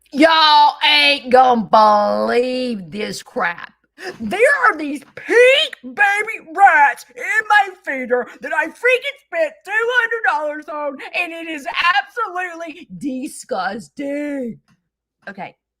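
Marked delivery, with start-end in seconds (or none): 0.2-14.6 very loud, high, dramatic, animated theatrical delivery. Showing how a story sounds told the second way: theatrical, animated storytelling. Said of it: "I am very theatrical".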